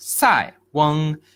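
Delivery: Sai said with falling fourth tone. Explaining the idiom's character name sai weng: falling fourth tone on sai. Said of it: "Sai is the fourth tone, so you got to go like down".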